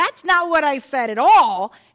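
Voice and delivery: loud, high, indignant blurted outburst.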